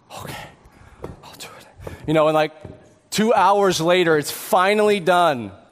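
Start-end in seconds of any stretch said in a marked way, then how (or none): 0.2-1.9 sulky, grudging huff whispered under the breath. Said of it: "huffs and puffs".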